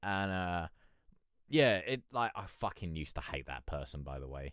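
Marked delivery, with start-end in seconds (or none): none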